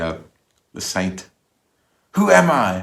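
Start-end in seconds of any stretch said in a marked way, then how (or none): 2.1-2.8 high, loud scream. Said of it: "she screams at the".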